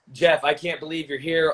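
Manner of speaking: plain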